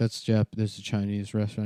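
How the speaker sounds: plain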